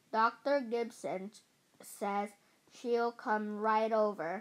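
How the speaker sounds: plain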